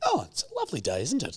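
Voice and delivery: far too relaxed tone. Recounting the drive to hospital, the speaker imitates mum in the car: imitating mum's overly calm voice. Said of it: "being like too chilled out".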